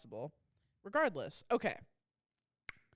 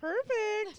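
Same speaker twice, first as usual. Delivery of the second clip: mock smug, satisfied voice, much higher. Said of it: "You're like".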